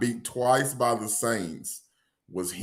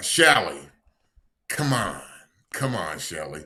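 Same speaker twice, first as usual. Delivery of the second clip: animated sketch-comedy character voice, wide swooping pitch; 4 semitones lower than usual. Imitating a sketch character pleading: imitating a Mad TV sketch character. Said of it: "Mad T V sketch where he'd be like".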